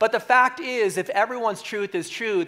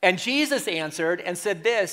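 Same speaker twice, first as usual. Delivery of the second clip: ordinary talk, nothing marked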